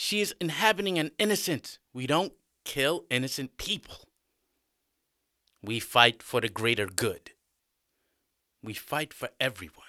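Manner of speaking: usual speaking voice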